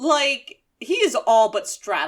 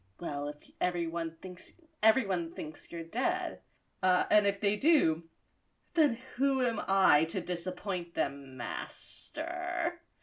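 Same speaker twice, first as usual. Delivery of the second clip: put-on seductive voice, lower and quieter; 4 semitones lower, 7 dB quieter than usual. Retelling a scene where one character leans into another's ear: mock-sensual Steve Blum voice. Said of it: "in the most sensual voice".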